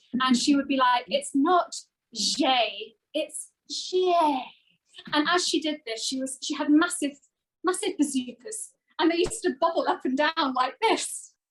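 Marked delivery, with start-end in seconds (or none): 1.1-4.2 very slow, drawn-out, frustrated, exasperated delivery. Retelling how she corrected his deliberately bad French accent, mock-frustrated correction. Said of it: "she used to get really frustrated".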